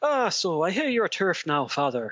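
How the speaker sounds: fake, played-up, put-on Irish accent. Playing along after suggesting both go Irish: put-on Irish accent. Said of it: "ditch the Oz and Kiwi accents and go Irish".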